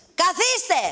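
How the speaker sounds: shouting. Telling a guest to sit down a second time: shouting. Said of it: "γιατί φωνάζετε".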